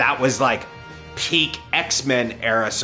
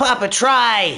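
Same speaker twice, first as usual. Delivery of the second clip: yelling, shouting; 12 semitones higher, 6 dB louder than usual. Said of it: "Would you stop yelling?".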